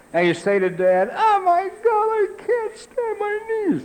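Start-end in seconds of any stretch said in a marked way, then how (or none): 1.1-3.8 put-on blubbering child voice, very high-pitched and slow. Retelling showing Dad a torn knee as a child: imitating a crying child. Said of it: "knock off the crying".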